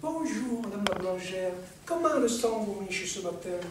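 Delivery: syrupy, honeyed, sugary sweet-talking tone. Telling a listener how a man greeted their mother at the bakery, mock-honeyed voice. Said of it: "d'une voix mielleuse".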